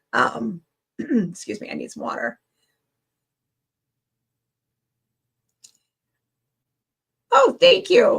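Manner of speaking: ragged, worn-out, rough, scraggly speaking voice. Thanking the audience, the speaker excuses herself for water, with a scraggly voice. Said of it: "My voice is starting to get scraggly".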